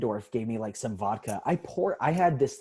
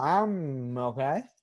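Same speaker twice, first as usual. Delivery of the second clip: put-on drunk young woman voice; 2 semitones higher than usual. Retelling stumbling around grabbing people at a party: imitating a drunk sorority girl. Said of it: "sorority girl drunk for the first time".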